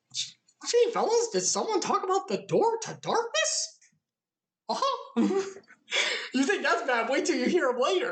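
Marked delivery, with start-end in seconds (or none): 0.1-5.4 high-pitched cartoon mouse character voice. Recapping a game story, doing the Mickey voice. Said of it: "that Mickey voice".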